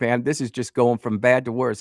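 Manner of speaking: ordinary delivery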